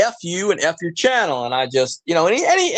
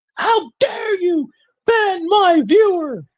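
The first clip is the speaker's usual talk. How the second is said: mock very high, slow, drawn-out screaming; 12 semitones higher than usual. Retelling how another streamer screamed during his live stream: imitating someone screaming. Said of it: "He just started screaming in the middle of his live stream".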